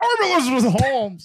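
very high-pitched, natural own voice. Imitating how Elizabeth Holmes's real voice sounds: imitating Elizabeth Holmes' real voice. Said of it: "Her real voice sounds like".

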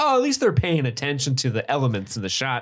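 ordinary delivery

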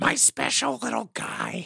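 very high, rough, swooping cartoon housewife voice. Doing a cartoon mom line that the others praise: Marge voice. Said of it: "that's a really good Marge".

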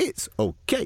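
high-pitched, simplified broken English. Retelling answering a woman who speaks little English, imitating broken English. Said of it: "I don't know why I'm talking like that".

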